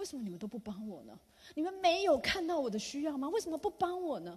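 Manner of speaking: high-pitched, loud, angry voice.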